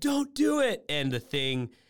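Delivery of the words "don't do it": very high-pitched, acted-out yell. Describing a scene where a man yells at his past self, retelling a yell. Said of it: "So he's yelling at him".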